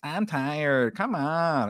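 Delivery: put-on high, very slow, drawn-out baby voice. Retelling how Marsha dodged a talk, imitating Marsha's baby voice. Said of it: "in her stupid baby voice".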